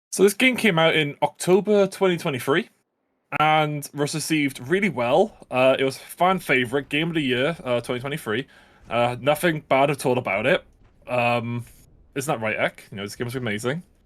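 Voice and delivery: ordinary talk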